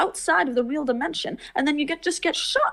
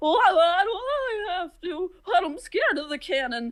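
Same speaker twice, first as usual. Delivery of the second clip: put-on scared clown voice, higher pitch; 3 semitones higher than usual. Retelling clowns preparing a cannon stunt; John John acting scared. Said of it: "John John, you're not even doing the bit yet. You're not supposed to actually be scared".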